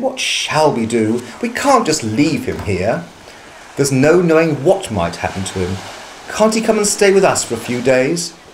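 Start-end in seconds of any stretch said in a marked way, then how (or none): none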